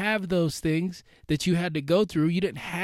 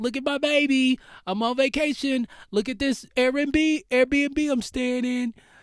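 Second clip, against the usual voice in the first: high, bragging, show-off voice. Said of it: "They're like".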